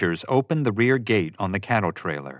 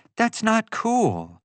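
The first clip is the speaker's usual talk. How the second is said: very high-pitched, reproving, chiding tone; 12 semitones higher than usual. A daughter speaks to her father, chiding. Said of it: "Summer chided".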